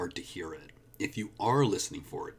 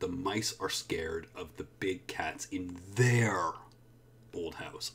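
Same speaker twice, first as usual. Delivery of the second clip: heavy emphasis on their. Showing that a normally unstressed word is important, extra stress on 'their'. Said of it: "I'm really showing you there is important".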